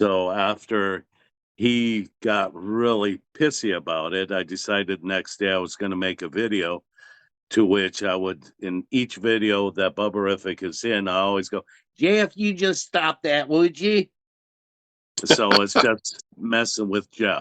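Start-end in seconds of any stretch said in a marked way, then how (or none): 12.0-14.1 put-on Southern accent, pitched very high. Speaker shows the line he always says to jeff in his videos, southern accent. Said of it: "He really disliked the Southern accent".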